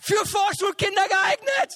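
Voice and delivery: high, loud, desperate and defensive shout.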